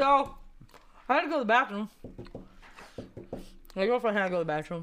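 talking while eating, mouth full of food. Speaker telling a story while eating, talking while chewing. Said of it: "It's hard to do this and talk".

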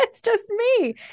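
laughing while speaking.

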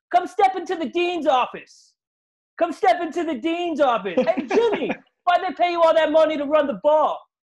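shrill, very high, loud jeering, taunting yell. Acting out Frank Clark screaming at Jimmy Garoppolo in the Super Bowl, retelling Frank Clark's yelling. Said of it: "he's yelling at Jimmy Garoppolo".

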